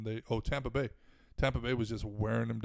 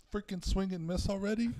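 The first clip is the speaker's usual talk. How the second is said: put-on screaming, higher pitch; 9 semitones higher than usual. Retelling screaming at a batter during a game: retelling own scream. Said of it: "I screamed at him".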